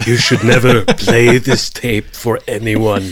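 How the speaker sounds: slow, drawn-out, unhurried and measured delivery. Quoting a line from Grizzly Man: Werner Herzog impression. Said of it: "that's a pretty good impression".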